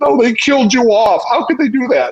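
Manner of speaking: play-acted very high, tearful crying wail. Retelling a sister's call after the finale aired: imitating sister crying. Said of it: "she's, like, crying".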